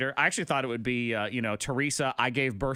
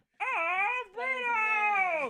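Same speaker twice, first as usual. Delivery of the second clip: very high squeak with the word "of" drawn out. Imitating how a word sounded on a recording: Urkel meets Kermit the Frog voice. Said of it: "sort of like this Urkel meets Kermit the Frog".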